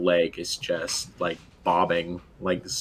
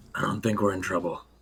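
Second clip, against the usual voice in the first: hushed, whispered aside. A player voicing Mal leans over to Vashti, whispering. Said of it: "kind of bend over and like whisper".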